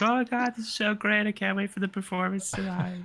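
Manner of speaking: very high, gushing, excited fan cheering voice. The narrator voices a random crowd member before a performance, excited cheering. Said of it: "cheering behind the crowd".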